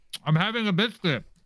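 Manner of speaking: very high voice, talking through mouthful of food. The other speaker teases you for eating; answer while eating: talking while eating. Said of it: "Eating, stuffing your face".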